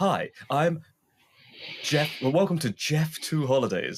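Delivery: high, welcoming commercial-style voice. Retelling a parody advert, imitating Jeff Goldblum voice. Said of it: "doing it in his own Jeff Goldblum way".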